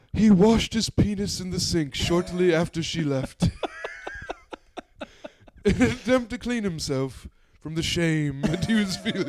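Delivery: nature documentary narrator voice. Imitating narration of life with a David Attenborough voice. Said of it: "David Attenborough, like, fucking, uh, like, narrating".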